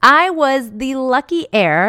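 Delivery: slow drawl with heavy sarcasm, words set apart. Describing the classroom a new teacher inherited: sarcastic. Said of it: "I say that with air quotes and complete sarcasm".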